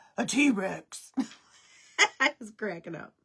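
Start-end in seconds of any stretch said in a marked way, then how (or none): 0.2-1.1 put-on very loud, big, booming child voice. Retelling a little boy's reply to a question; imitating Emmett's deep voice. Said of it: "This big, deep voice comes out".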